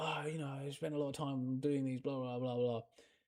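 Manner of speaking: acted, irate, angry griping delivery. Retelling the painter's reaction after stepping on his painting: imitating someone angry. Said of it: "really angry".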